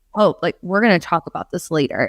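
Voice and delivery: very stern, firm, no-nonsense tone. Retelling a film scene after someone barges into a session: imitating Wilma speaking sternly. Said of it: "Wilma just very sternly says".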